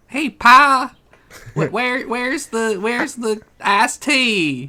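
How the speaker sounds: put-on Atlanta accent. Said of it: "they all have the accent of wherever they're put in the tube".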